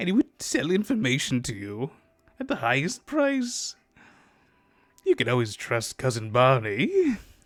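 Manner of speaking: goblin voice with swooping, swinging pitch. Speaker recalls a goblin who sold information, cousin Barney goblin voice. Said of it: "Always talking like this. And he was a goblin".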